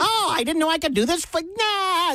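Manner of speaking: high cartoon-character voice. Joking around on air, trying a line in a SpongeBob voice. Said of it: "That was SpongeBob".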